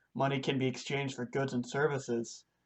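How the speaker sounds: plain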